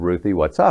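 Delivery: ordinary delivery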